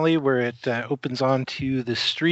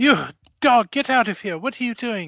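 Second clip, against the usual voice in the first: voice raised in pitch; 9 semitones higher than usual. Voicing a character shooing away a bloody dog: shooing a dog away. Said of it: "she kind of shoos at the dog".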